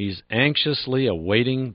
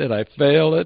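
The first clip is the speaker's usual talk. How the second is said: embarrassed tone, higher pitched and louder. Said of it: "Boy, are you embarrassed".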